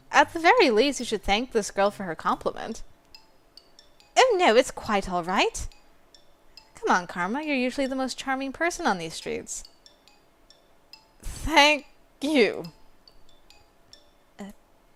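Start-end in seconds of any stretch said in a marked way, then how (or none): 11.2-12.6 weak, strained, sickly voice as if dying. Reading a story, voicing Karma thanking a girl, sounding like he's dying. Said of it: "Sounds like he's dying now".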